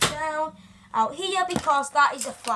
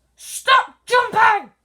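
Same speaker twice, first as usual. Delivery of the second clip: very loud, high, all-out scream; 8 semitones higher, 11 dB louder than usual. Filming a video, after apologizing to viewers for shouting: shouting. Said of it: "I'm very sorry for my shouting at this moment".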